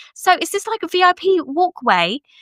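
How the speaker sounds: put-on English accent, high and slow. Retelling what the Dillon mom from England said on the walkway, imitating Felicity's English accent. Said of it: "I'm trying to do her accent".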